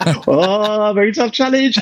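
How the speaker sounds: put-on very high child's shout with drawn-out oh. Retelling how the youngest child yells during a boss fight: imitating a child shouting. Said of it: "will just shout that at the top of his".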